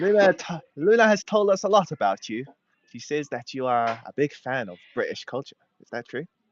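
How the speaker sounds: rough, approximate put-on British accent. Playing the British dad in a scene, in a British accent. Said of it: "a British accent".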